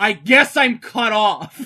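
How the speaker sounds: mock very loud, sloppy drunken slurred speech. Telling a story, quoting a guy who was very drunk: imitating a drunk guy. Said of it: "the guy was so drunk".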